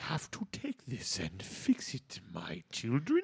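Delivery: strange, weird, deep put-on voice. After saying he can't do it, trying again, weird deep Grinch voice. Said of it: "He's got like that weird deep voice".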